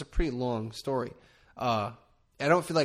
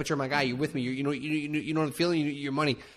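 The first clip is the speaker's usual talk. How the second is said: put-on fast-talking charming voice, rattled off quickly; 2 semitones higher than usual. Imitating a favorite actor's fast-talking charm: imitating Vince Vaughn fast talking. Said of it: "Vince Vaughn does it. He's like".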